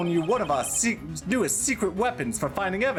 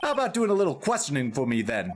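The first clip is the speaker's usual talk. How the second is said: plain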